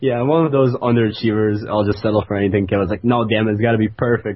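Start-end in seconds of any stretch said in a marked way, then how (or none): none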